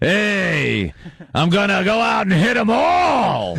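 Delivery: slow drawl, "hey" drawn out very long. Imitating an actor's voice in a video game: Al Pacino impression. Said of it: "That's not Michael anymore".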